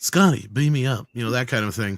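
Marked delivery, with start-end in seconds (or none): 0.0-1.1 loud, drawn-out, fully committed delivery, taking its time. Showing how Shatner really sounds: Shatner impression. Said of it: "the actual Shatner sounds more like".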